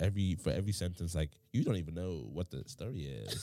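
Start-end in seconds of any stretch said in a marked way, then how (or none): 1.5-3.4 full-on, all-the-way put-on American accent. Imitating local people who talk in full-on american accents: imitating an american accent. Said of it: "full-on American accents".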